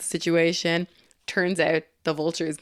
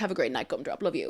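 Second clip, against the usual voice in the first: put-on doting, loving dad voice, played to the hilt; 6 dB quieter than usual. Retelling a movie scene where the father sends his daughter off: imitating Michael Keaton's doting dad. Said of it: "doing the full-on dad thing".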